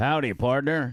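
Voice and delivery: cowboy voice. Opening the show with a greeting to listeners: cowboy voice. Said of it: "you were doing the cowboy".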